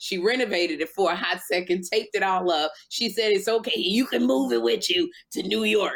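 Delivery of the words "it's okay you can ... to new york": confident, assured, no-worries tone. Retelling what the woman said after taping it up: imitating her. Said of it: "Your impressions are really good".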